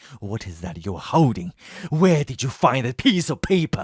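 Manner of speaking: cartoonish put-on character voice. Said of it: "this sounds like a, a cartoon character".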